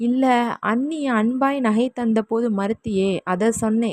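plain

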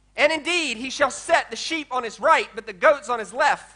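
ordinary delivery

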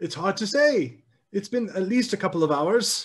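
put-on old, elderly woman voice. A game master voices an elderly apothecary answering the adventurers about her cat: elderly woman voice. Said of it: "You four together have been brought to an elderly woman in town. She's an apothecary".

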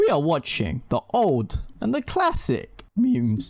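voice cracking. Opening a video about watching classic memes: voice cracking. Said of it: "my voice crack".

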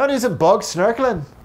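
poorly done, high-pitched, loud mock Welsh accent.

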